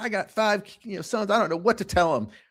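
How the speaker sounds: high woman's scream. Retelling a video of a woman at a game: imitating a woman screaming. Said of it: "she's screaming".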